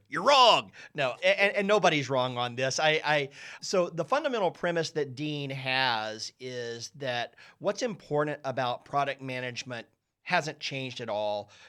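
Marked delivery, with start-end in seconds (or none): 0.2-0.8 booming, high, very loud delivery. Opening a reply about why someone is wrong: Robert McLaughlin impression. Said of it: "my best Robert McLaughlin impression".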